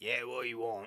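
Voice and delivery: put-on Australian accent. Voicing a resident peeking through the door: Australian accent. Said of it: "he's Australian".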